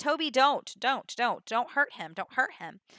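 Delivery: ordinary delivery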